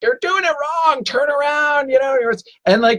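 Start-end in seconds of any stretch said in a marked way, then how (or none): 0.0-1.9 acted, very high, loud bullhorn-style shout. Retelling how dock staff yell at kids: imitating someone yelling at kids. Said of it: "grabbing the bullhorn and yelling at kids".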